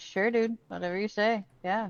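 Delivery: casual, don't-care, nonchalant, unbothered voice. Retelling a reply given to kidnappers: imitating own nonchalant voice. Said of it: "with the nonchalant voice".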